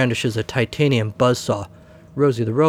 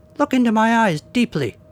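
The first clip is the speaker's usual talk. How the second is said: very high, squeaky mouse voice; 10 semitones higher than usual. Narrator reading a story, a toy mouse looks into the camera: squeaky wind-up mouse voice.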